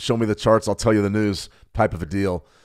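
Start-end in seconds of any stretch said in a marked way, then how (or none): none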